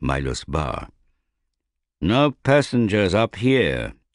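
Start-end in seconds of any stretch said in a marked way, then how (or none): 2.0-3.9 slow, strict, no-nonsense stern voice. The ship's captain to a passenger who climbed to the tiller deck: stern. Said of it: "said the captain sternly".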